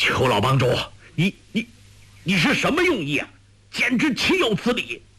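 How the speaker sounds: angry, very high-pitched, rising voice. Elder Jian confronts Chief Qiu after Yang Kang is thrown, speaking angrily. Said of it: "怒道".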